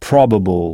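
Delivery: probable with stress on the first syllable pro. English pronunciation lesson given in French: stress on PRO in probable. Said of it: "On frappe en quelque sorte sur cette syllabe".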